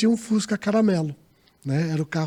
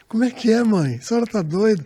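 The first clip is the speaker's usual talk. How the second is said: put-on talking through laughter; 3 semitones higher than usual. Retelling how she answered her mother back then, retelling a laughing reply. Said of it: "do jeito que eu tô rindo agora".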